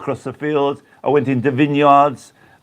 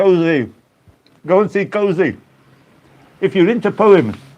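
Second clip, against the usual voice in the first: mouth full while talking, much higher; 5 semitones higher than usual. Recommending a favourite while snacking and chatting at the same time, talking with mouth full. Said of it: "I've got a mouthful".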